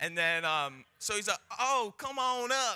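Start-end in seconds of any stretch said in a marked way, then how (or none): 1.6-2.8 very high, slow, drawn-out put-on Southern drawl. Retelling the pastor calling him up to the front: imitating a Southern accent. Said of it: "He's very Southern".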